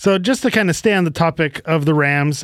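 ordinary delivery

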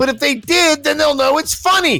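high-pitched, shouted rant.

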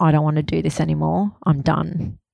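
ordinary delivery

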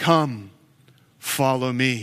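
loud, deep, low narrator voice. Act out Jesus calling to fishermen casting their nets, in a Morgan Freeman voice. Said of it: "with this loud Morgan Freeman voice".

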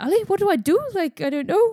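very high, loud, silly, bad fake Scottish accent. Retelling a friend's panicked words in a stupid scottish voice impression. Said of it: "really stupid inter-, impersonation of a Scottish voice".

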